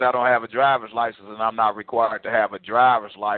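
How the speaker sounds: normal talking voice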